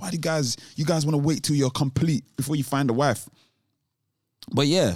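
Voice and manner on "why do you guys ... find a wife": ordinary talk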